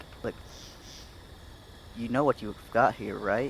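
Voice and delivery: soft, hushed, close whisper. Leaning in toward him so only he can hear: whispering. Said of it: "I'm whispering to him like".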